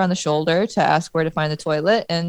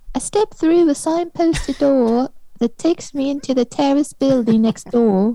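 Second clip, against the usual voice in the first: higher-pitched fake English accent; 6 semitones higher, 3 dB louder than usual. Reading out a woman's Twitter message about a toilet: imitating her English accent. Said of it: "I'll try the accent of how she said to me".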